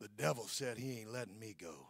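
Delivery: man's voice, very low, very soft and hushed. Retelling what a small, frail woman said, imitating her manly voice. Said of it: "with the manliest voice I've ever heard a woman have".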